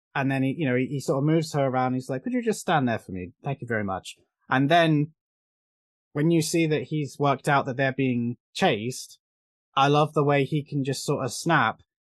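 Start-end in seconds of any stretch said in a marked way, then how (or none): 2.3-4.2 smooth, well-spoken posh voice, calm and sing-song. Quoting a character who asks a mechanic to stand there: imitating a calm, posh speaker. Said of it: "very calm, very eloquent, kind of posh".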